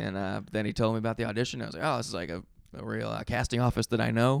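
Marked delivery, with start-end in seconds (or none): none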